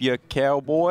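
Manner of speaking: mock Northern English accent.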